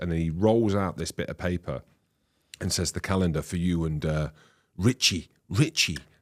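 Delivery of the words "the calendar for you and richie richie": choppy, halting, non-native broken English phrasing. Retelling a handshake welcome to a new club, imitating broken English. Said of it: "in broken English".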